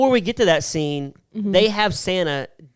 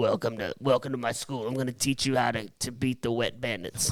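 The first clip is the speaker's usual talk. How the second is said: put-on kid's voice played as an old man; 6 semitones lower, 11 dB quieter than usual. Imagining a character welcoming students to his school: imitating an old Kevin McAllister. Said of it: "Kevin McAllister's now old 'cause he's, he's like".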